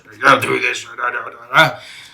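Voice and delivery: put-on loud, raspy drill-sergeant yelling voice. Showing how drill instructors are taught to talk: imitating a raspy drill instructor voice. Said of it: "the drill instructor's gotta have the raspy voice".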